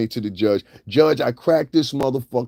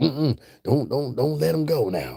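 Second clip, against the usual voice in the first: put-on, done-up men's voice; 4 dB quieter than usual. Imitating the men who would come up and speak: imitating those men's voices. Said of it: "I know how to do them voices".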